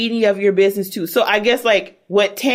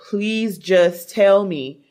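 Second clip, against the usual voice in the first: mock tearful, sobbing plea, slow and very drawn out. Retelling how someone begged for details: imitating someone sobbing. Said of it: "crying, like, sobbing".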